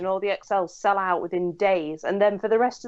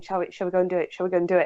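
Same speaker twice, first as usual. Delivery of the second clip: put-on giggly, girlish half-whisper like a schoolgirl. Retelling spotting someone at a festival with a friend: imitating giggly half-whispering. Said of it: "whispering like little girls saying".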